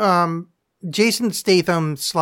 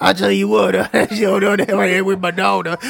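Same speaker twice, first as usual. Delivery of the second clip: put-on New Orleans accent, higher and louder; 3 semitones higher, 4 dB louder than usual. Imitating Steven Seagal going from stoic master to a New Orleans porch guy: Steven Seagal as New Orleans porch guy. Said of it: "some guy at a porch in nola".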